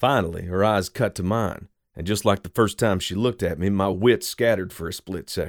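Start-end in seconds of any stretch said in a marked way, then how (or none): none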